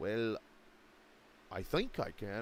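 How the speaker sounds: put-on slow, clumsy, unconvincing botched Welsh accent. Speaker imagines what Isaac would say if asked; imitating Isaac's Welsh accent. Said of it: "I'm going to botch this accent".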